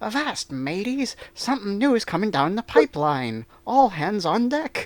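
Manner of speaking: high-pitched, loud, hollered cartoon pirate voice. A speaker demonstrates the mascot voice for Jolly Roger members, Mini Matey pirate voice. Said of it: "it's basically it's a cartoon pirate voice, a, a high-pitched".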